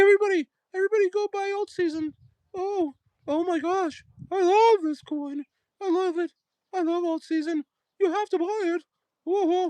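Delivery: put-on very high-pitched old woman voice, like an elderly nanny. Mocking how Superman talks, speaker imitates him in a Mrs. Doubtfire voice. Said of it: "He sounds like missus Doubtfire".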